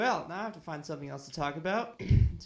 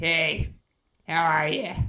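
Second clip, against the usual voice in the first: put-on loud, belting old smoker-lady voice like a diner waitress; 8 dB louder than usual. Joking about an impression, one speaker imagines Wonder Woman as old smoker lady. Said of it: "like smoker lady from the diner".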